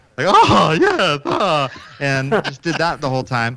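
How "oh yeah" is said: high, zany character voice. Showing how they talked the whole time on a tour, Mad Hatter voice. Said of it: "talked like the Mad Hatter".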